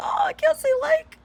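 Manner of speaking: high, loud, laughing mock wail.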